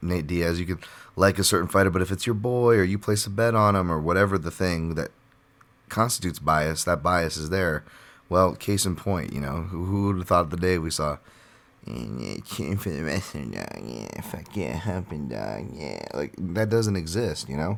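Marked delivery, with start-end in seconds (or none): 11.8-16.0 low, rough, gritty, creaking voice. Talking about fan bias toward fighters, doing a Nate Diaz impression. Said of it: "There's your Diaz impression".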